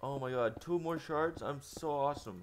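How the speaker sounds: thrilled, gleeful bragging. A player collecting shards in a game gets two more, getting excited. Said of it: "I don't even know why I'm getting excited over shards".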